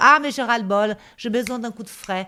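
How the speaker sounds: plain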